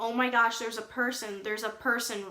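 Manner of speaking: ordinary talk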